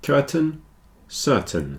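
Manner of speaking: curtain, certain stressed on first syllable, -tain reduced. Explaining how the two words sound, the speaker says them with first-syllable stress on curtain, certain. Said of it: "The A I sounds a bit like E".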